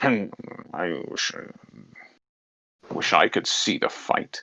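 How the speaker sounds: breathy, whispered, grumbling mutter. Narrating to listeners, voicing a man with a clipboard listening at a door, grumbling. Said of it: "he sort of grumbles and goes".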